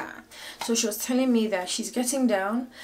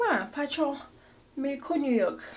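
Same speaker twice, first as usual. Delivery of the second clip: put-on speaking with a Twi accent; 5 semitones higher than usual. Retelling how she asked people for help, in her Twi accent voice. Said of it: "I have my Chi voice".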